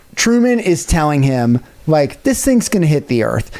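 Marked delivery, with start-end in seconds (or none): none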